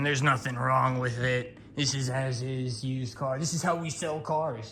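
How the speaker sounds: annoyed, irritated and insistent, brushing off. Retelling what the car dealer said about the used car: imitating an irritated dealer. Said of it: "he's pissed at me".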